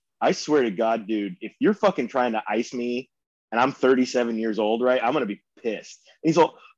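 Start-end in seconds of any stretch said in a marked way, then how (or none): none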